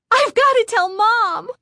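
very high, jubilant, excited. A girl speaks to her sister, declaring. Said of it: "Lindy declared".

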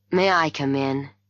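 usual speaking voice

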